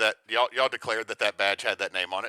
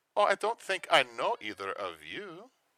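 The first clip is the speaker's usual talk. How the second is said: bad attempted German accent, higher and quieter; 5 semitones higher, 5 dB quieter than usual. Voicing a character who turns to greet two strangers: attempted German accent. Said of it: "I can't do a German accent".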